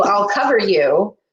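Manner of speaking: usual speaking voice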